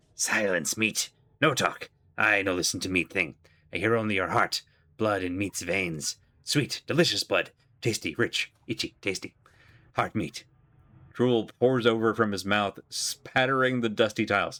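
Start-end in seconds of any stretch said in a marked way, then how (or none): 0.2-10.5 hissed, bestial ghoul monster voice. Voicing a ghoul that hisses at a questioner: hissing ghoul voice. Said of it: "The ghoul hisses at you".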